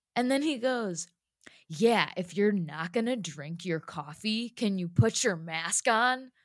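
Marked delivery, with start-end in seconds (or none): 1.6-6.1 mock hostile, pushy, aggressive, confrontational tone. Speaker retelling what a man said to them, imitating his aggressive demand. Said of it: "he like said it in that like aggressive tone".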